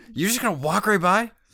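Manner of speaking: angry, indignant tone. Retelling how a woman reacted after being called names, imitating a pissed-off question. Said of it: "She was so pissed".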